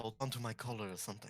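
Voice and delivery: hushed, soft, urging half-whisper. Speaking in character to a companion while moving in stealth: half-whispering. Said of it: "I whisper".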